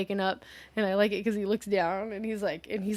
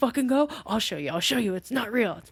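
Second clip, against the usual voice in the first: mock pissed-off, angry man's voice; 2 semitones higher than usual. Retelling a scene, the speaker imitates a man getting angry. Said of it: "And he gets pissed".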